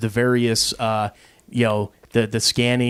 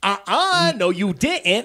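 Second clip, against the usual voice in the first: mock sassy, very high, very slow, drawn out; 9 semitones higher than usual. Asking if a friend snapped her fingers at the driver: imitating sassy finger-snapping. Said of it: "snapping her fingers".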